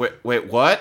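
ordinary talk

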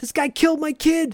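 acted high-pitched yell. Retelling a courtroom scene, a father yelling at the judge: retelling a yell. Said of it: "And Eddie yells".

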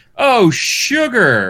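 squealed out, cheesy, corny and very high. Retelling how the announcer reacts when something bad happens: imitating Akbar's corny exclamations. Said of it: "he's corny, so he'll be like".

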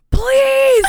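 very high, loud, desperate scream.

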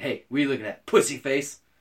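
ordinary talk

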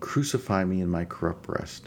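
ordinary delivery

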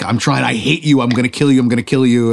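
deep, dropped, menacing dark-lord villain voice. Acting out a scene where Vader loses half his helmet: Darth Vader voice. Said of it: "and Vader loses the, half the helmet, and he's like".

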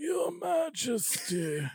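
very high, grand, regal, formal delivery. Act out her addressing the Queen while sitting with her, in a Margaret Thatcher voice. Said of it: "she was sitting with the Queen and she was".

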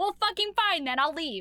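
put-on enraged outburst. Retelling a story, the speaker voices a man answering the woman, mock-furious. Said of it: "He's so fucking mad".

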